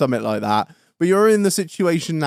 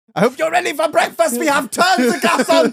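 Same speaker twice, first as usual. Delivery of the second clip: mock, put-on German accent; 11 semitones higher than usual. Improvising a sentient house waking everyone, German accent. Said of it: "You need a German accent for that".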